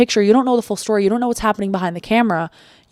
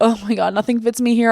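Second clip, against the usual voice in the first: mock panicked, freaking-out voice. Retelling looking in a store mirror when nothing fit: retelling freaking out. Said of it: "I was like freaking out".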